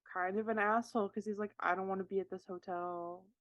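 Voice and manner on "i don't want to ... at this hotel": usual speaking voice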